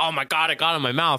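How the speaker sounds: put-on high, thrilled, gushing child voice. Acting out kids who got slimed on TV: imitating excited slimed kids. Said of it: "all the people who got slimed were, like, so excited".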